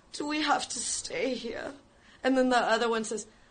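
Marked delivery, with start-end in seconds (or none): 0.1-1.7 sulky, pouting delivery. Retelling a band member's complaint, imitating him pouting. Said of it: "he pouts".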